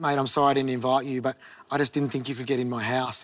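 ordinary talk

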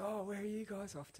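put-on American accent, very high-pitched. Retelling a stranger at the airport coming up to the group, American accent. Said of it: "and his American accent".

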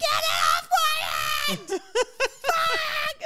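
mock, very high, very slow, drawn-out panicked scream. Pregnant woman retelling a panic in the street, acting out her panicked scream. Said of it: "And I'm like screaming".

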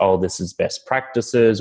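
usual speaking voice

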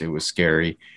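heavy emphasis on the word "scary". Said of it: "Emphasis on scary".

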